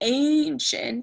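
put-on ancient said in an old, weird-sounding voice. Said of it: "my voice got a little weird on ancient".

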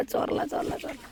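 soft, unvoiced, gloating whisper under the breath.

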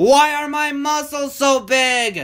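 high, drawn-out shout. Narrator reading a fleeing character's line in a children's story, shouted. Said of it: "Shouted Hefty".

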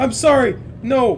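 high, loud, startled scream of fright.

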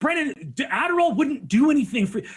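playful, high-pitched scolding tone. Retelling how the fiance yelled at the speaker: imitating Izzy yelling. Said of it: "she yelled at me".

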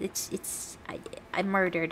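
unvoiced, agonized, dying whisper.

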